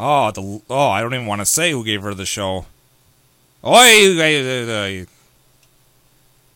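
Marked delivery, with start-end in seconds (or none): 3.6-5.1 loud, mock Brooklyn accent on "oi". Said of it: "That's how she talks".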